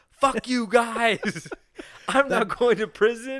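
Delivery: shrill, very loud, high, drawn-out full-throated scream. Acting out running into a courtroom: pretend screaming. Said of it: "I'm running in the courtroom screaming".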